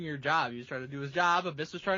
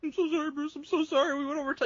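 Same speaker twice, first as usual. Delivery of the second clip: mock very high, frantic, nervous voice; 10 semitones higher than usual. Retelling how a producer apologized backstage: imitating someone panicking.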